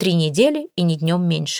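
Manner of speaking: ordinary delivery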